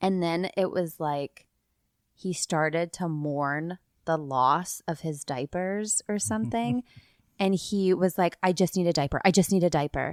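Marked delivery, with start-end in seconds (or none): 8.4-10.1 fast, frantic, full-blown panic, acted out. Retelling how a boy mourned the loss of his diapers, imitating full-blown panic. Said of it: "Like he was full blown panicking".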